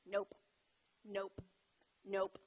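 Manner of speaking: put-on low, quiet, stubborn, dug-in little-kid tone. You show how Evie says this word, imitating how Evie says nope. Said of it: "That's how Evie says it".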